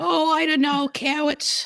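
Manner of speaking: put-on babyish voice, very high. Answering their own question in a comic bit, baby voice. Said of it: "why am I doing the baby voice?".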